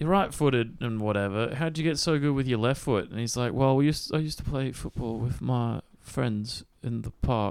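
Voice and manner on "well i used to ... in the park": odd fake English accent, slower. Retelling a belgian player's interview answer: weird put-on english accent. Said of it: "I'm doing this weird English one".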